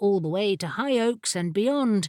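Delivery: plain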